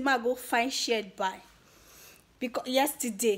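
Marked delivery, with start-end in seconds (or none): none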